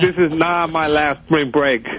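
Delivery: ordinary delivery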